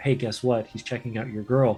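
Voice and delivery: whispering, whispered aside. Showing how a bard stirs up a bar fight: whispering in someone's ear. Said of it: "you're whispering in the guy's ear".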